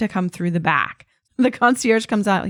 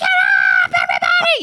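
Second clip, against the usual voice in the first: mock shrill, very high shouting yell; 4 dB louder than usual. Retelling waking everyone on the bus as the driver asked, yelling in mom voice. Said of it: "just using my mom voice".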